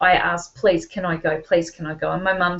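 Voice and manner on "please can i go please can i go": mock earnest pleading, begging repeatedly. Retelling asking a mother for permission to go: retelling own begging. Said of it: "So I begged my mum to go".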